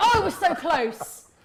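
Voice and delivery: put-on, overdone, loud, drawn-out dismay. Mocking the other speaker's reaction to a near miss: imitating an overreacting voice. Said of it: "stop doing that voice".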